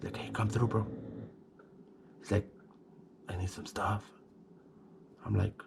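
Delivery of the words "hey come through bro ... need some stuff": put-on whisper, quieter. Retelling a phone call where a friend asks him over: imitating a friend whispering. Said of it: "Why are you whispering?".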